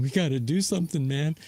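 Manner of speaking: voice near tears, on the verge of crying. Retelling a plea before the trade deadline: imitating Bryce Harper almost crying. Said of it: "almost crying".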